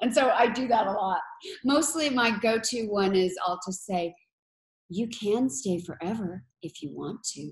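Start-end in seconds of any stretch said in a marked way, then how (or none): 4.9-7.5 eerie, menacing, creepy character voice meant to chill. Describing the voicemail messages the speaker leaves, in the Other Mother's voice. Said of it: "in the other mother's voice".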